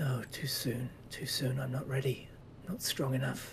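quiet muttering to himself. Narrating a scene, a man looking at an envelope, saying to himself quietly. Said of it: "he says to himself quietly".

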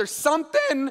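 sudden voice crack mid-phrase, jumping up high. Paraphrasing what a parable says when the voice suddenly cracks: voice cracking. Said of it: "my voice cracked there".

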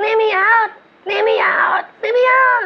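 small, tiny, very high little voice. Telling a story, voicing a trapped spirit calling out: little voice. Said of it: "he hears this little voice".

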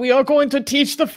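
bad put-on German accent. Imagining quotes from a meeting read aloud: bad put-on german accent. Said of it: "certain bad man's German accent".

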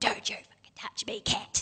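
mock enraged, furious, breathy whisper. Retelling what the neighbour's brother said when touched: imitating an angry man. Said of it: "He was really angry".

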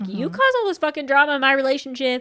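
imitated angry yelling. Retelling a reality show argument in a car: retelling someone yelling. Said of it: "immediately is also kinda yelling at her".

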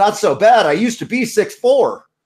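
high, mock-indignant, offended, put-out tone. Telling a joke where Tyrion answers the brothel keeper; mock-offended Tyrion. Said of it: "Tyrion gets all offended and says".

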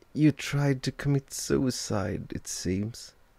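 high, quavering, unsteady, trembling voice. Frank answers Ella, who has just woken and asked what happened: trembling voice. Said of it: "His voice was trembling".

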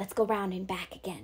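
breathed, said on a breath. Jem, leading the others away from the window, breathed. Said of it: "breathed Jem".

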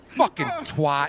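furious, loud, high-pitched raging outburst. Yelling at the game after falling again: angry outburst. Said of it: "you're so emotional".

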